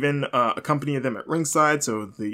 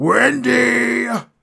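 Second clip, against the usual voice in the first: mock scary, furious, very high, loud drawn-out shout; 9 semitones higher, 7 dB louder than usual. Retelling a wrestler grabbing the mic: imitating Samoa Joe's angry scary voice. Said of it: "in his angry, scary Joe voice".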